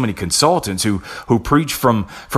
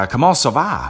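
fake put-on Louisiana accent, pitched higher; 4 semitones higher than usual. Explaining that faking accents is inauthentic, giving a fake Cajun accent example. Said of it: "if I fake a Cajun accent".

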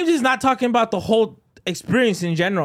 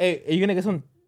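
ordinary delivery

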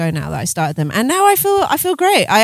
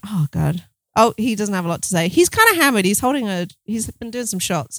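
normal talking voice

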